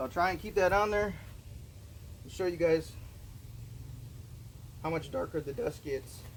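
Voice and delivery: voice catching and breaking mid-line. Demonstrating a process to viewers, voice cracking. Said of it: "my voice is cracking here".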